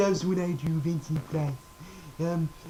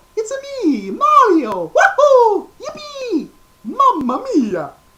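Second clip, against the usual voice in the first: cheerful plumber voice, much higher, louder; 13 dB louder than usual. Listing cartoon and game characters, the speaker introduces the next one in Mario voice. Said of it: "Then we have Mario".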